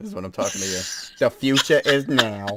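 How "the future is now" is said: New York Staten Island accent. Show the person who brings it out of you your Staten Island accent. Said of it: "bring out my Staten Island accent".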